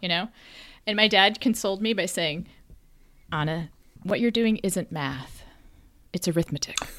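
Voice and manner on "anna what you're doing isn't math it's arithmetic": mock scorn, lower and quieter. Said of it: "the scorn in his voice when he said arithmetic".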